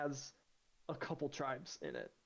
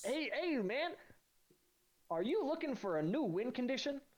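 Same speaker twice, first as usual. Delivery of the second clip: put-on pitched-up, old-fashioned, old-timey salesman voice; 9 semitones higher than usual. Pitching a new card to the other speaker, in an old-timey salesman voice. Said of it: "like an old-timey salesman".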